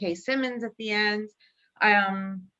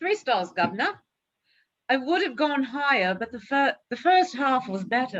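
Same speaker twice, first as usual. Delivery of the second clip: clumsy, terrible, fake British accent; 3 semitones higher than usual. Reading out texted thoughts from someone who couldn't be there, in a terrible British accent. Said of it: "My British accent is terrible".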